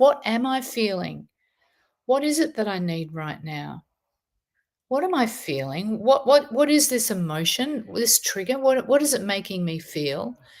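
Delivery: ordinary talk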